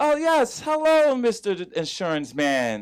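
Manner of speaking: very professional tone. Describing parents on business calls, speaker imitates their very professional tone. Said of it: "they speak in a very professional tone".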